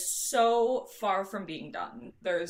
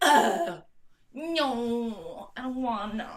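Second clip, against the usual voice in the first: mock, very slow, drawn-out whine; 3 semitones higher than usual. Retelling how she refused to help as a kid: imitating her younger self refusing. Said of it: "I'd be like".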